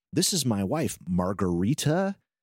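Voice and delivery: strong American accent.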